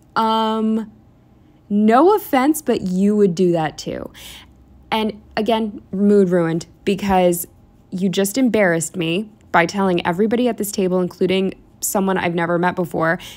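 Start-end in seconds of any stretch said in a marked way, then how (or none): 0.1-4.1 acted-out slow, deliberate, pointed, "um" drawn out. Retelling how he announced something to the whole table, retelling a raised voice. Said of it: "he then raises his voice".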